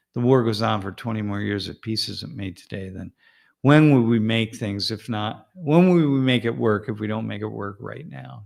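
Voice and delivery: ordinary talk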